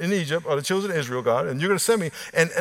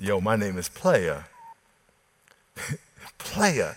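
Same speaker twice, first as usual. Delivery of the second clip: smooth late-night radio DJ voice, much lower; 9 semitones lower than usual. Retelling how a guy named Player introduced himself, in a smooth late-night radio voice. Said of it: "he said it with like a smooth, late night radio voice".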